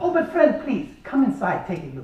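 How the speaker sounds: terrible put-on Greek accent. Retelling a boat trip, the speaker quotes the man with the boat in a terrible Greek impersonation. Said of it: "this is a terrible Greek impersonation".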